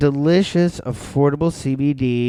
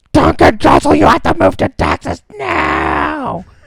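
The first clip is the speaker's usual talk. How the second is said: very high-pitched, shrill, loud screaming; 12 semitones higher, 7 dB louder than usual. Retelling a podcast moment, imitating Joe Rogan screaming. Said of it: "screaming at him about moving".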